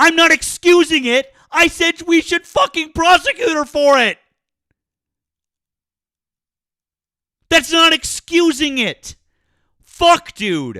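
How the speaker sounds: very loud, high-pitched, furious shouting. Arguing with another speaker who will not listen: yelling angrily. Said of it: "I am yelling at you".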